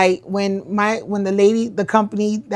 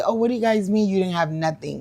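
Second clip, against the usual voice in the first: ordinary delivery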